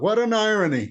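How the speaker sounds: mock sudden high half-shout, yelled out. Retelling a remark called out at security gates: retelling own yell. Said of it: "I kinda yelled out".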